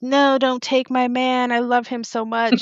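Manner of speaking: play-acted high, mild half-scream. Speaker retells the end of a story where a woman screams, imitating her screaming. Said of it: "she's like screaming".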